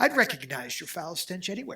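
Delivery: put-on proper, formal, clearly enunciated English accent. Retelling how an actress delivered her film line: formal English accent imitating Carrie Fisher. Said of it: "she said it with an English accent".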